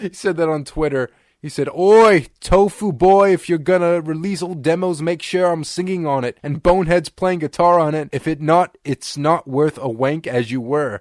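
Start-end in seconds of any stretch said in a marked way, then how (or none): 1.7-11.0 loud, rough attempted Cockney accent. Quote to the others what he wrote on Twitter, in an attempted Cockney accent. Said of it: "I could barely speak his Cockney there".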